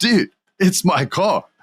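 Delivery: lazy, slow, high surfer-dude drawl. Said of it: "He sounds like Bill and Ted's Excellent Adventure".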